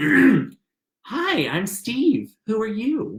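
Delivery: comforting, very slow voice. Recounting a first meeting as the man introduces himself, imitating Steve's welcoming voice. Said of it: "the most comforting, welcoming voice".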